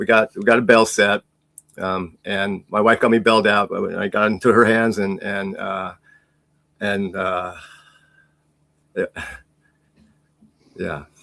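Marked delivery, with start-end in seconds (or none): 2.2-11.0 choked up, emotion catching in throat, voice breaking. Recounting their wife bailing them out after court, choked up. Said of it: "I get choked up".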